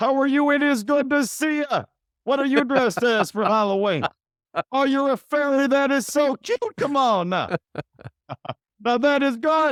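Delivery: put-on very high-pitched voice, high kid-style voice. Act out him bending down to greet a kid at halloween, imitating his higher-pitched voice for kids. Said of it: "his voice gets higher pitched".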